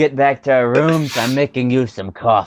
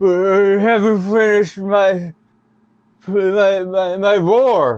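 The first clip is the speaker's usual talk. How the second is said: crying with mouth full, much higher; 7 semitones higher than usual. In a roleplay, a character still eating as others head out; crying with mouth full. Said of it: "I also have my mouth full".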